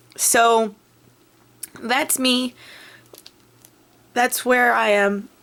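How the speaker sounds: voice catching, choking up, close to crying. Speaker sharing a personal written story starts to cry: choking up, teary. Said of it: "I'm getting crying a little bit".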